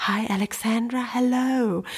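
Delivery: barely-there, very soft, quiet voice. Recounting a phone call, the speaker quotes the man on the other end, very quietly. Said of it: "Bruce am anderen Ende so ganz leise so".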